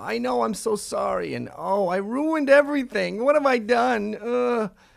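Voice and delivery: put-on high, loud, creaky old man voice, drawn out.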